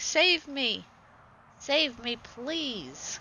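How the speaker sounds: very slow, high, pleading little goat voice. Voicing the young goat calling to the speaker at the gate: put-on pleading goat voice. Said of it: "he's like".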